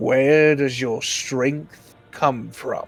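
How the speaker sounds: deep, low, rumbling voice. Storyteller voicing a voice from the thunder asking the listener, in a deep voice. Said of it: "As a deep voice comes through dun- thunder".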